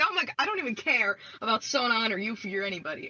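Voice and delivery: crying, sobbing, bawling outburst through the words. Retelling own reaction to a game's extra scene: imitating own sobbing. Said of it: "I'm, like, sobbing".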